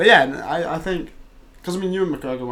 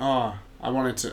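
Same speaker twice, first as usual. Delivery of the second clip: normal talking voice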